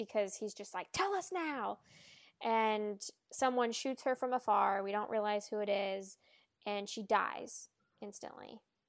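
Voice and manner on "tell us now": high, hot-tempered, angry, demanding tone. Retelling a character demanding an answer: imitating an angry demand. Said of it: "his intense anger problem".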